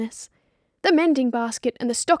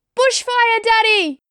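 put-on very high, piercing, shrill shout like a child's cry; 10 semitones higher, 6 dB louder than usual. Reading a story aloud, a child calls from outside: high piercing child's cry. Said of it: "a high voice pierces through the shuttered house".

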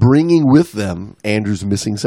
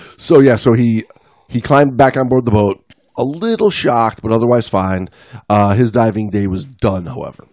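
usual speaking voice

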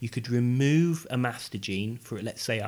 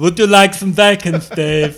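put-on talking pig voice, southern European accent, much louder; 6 semitones higher, 16 dB louder than usual. Joking about a future pig with a human brain, Southern European talking pig voice. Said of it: "He's kind of like a South European pig".

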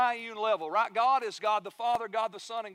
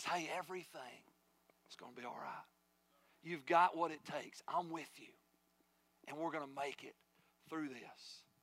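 soft, hushed whisper, close into the ear; 6 semitones lower, 12 dB quieter than usual. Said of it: "as He whispers in your ear and says".

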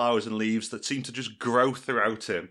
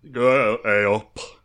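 put-on full Yorkshire accent, very loud and booming; 8 dB louder than usual. Voicing a character during a role-play, slipping into a Yorkshire accent. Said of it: "I can't have the whole Yorkshire".

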